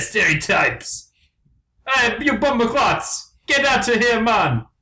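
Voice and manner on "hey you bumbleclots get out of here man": bad put-on Jamaican accent, pitched up. Joking about the birds in the movie Rio, in an unconvincing put-on accent. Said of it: "A very unconvincing accents".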